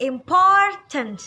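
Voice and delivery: important with second syllable por stressed. Indonesian-language english pronunciation lesson, demonstrating stress on por in important. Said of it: "itu yang kita tekan adalah pour-nya".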